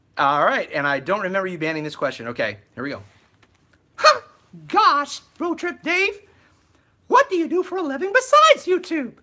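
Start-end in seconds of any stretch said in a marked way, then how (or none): 4.0-9.1 squeaked out very high. A YouTuber reads a viewer's question aloud in a Mickey Mouse voice. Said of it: "My question in your Mickey Mouse voice".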